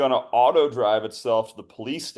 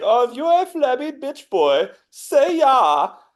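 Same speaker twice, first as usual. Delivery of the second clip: very high, shrill, loud German fitness-coach voice; 13 semitones higher, 5 dB louder than usual. Riffing on combining bits into one voice, as a German fitness instructor. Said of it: "the German fitness instructor who's just like".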